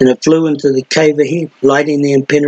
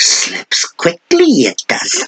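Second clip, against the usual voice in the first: soft, rasping, murmured creature voice; 4 semitones higher than usual. A storyteller voices the other figure answering a call to hurry: soft rasp. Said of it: "the other rasped softly".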